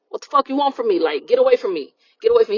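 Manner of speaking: mock, half-voiced, mild, repeated yell. Retelling a movie scene where the dad screams at an old lady: imitating someone screaming. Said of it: "He's just screaming at the lady".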